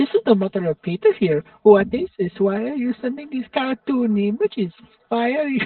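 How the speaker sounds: put-on Dutch-accented voice. Reading out a posted message from someone's mother, in a Dutch accent. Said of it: "I gotta do the Dutch accent".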